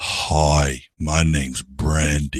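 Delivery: deep, very slow, drawn-out woman's voice. Retelling a dancer's greeting: imitating a deep-voiced woman. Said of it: "that woman's voice was deeper than mine".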